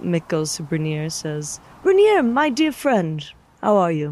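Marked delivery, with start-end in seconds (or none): 1.8-4.1 very loud, forced, put-on hearty jolly cheer. Narrator voices Mick greeting his friend Brynjar in the tavern: forced jolly cheer. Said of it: "trying to put on a jolly face".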